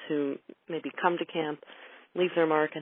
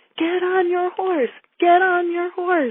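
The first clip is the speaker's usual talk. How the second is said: very loud, very high, full-lung rallying yell; 11 dB louder than usual. Retelling someone charging into a dining hall on a pool noodle: retelling a shout at the top of lungs. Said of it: "just at the top of her lungs".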